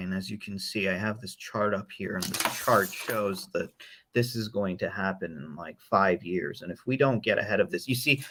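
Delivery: boring, monotonous delivery in a low, dry monotone. Demonstrating to a co-host how a dry speaker sounds, in a dry monotone. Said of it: "the way I'm talking is very boring".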